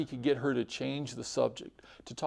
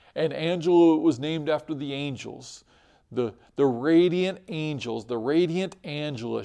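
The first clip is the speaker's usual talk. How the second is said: ordinary talk, nothing marked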